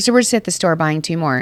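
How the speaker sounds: ordinary talk, nothing marked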